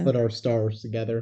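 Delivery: ordinary delivery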